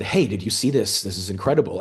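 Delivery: ordinary delivery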